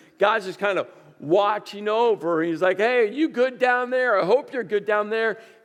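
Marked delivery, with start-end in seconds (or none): 2.8-5.4 mock sarcastic, reassuring tone. Imitating a distant god checking on people below: imitating a sarcastic god. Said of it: "with that sarcastic thumbs up".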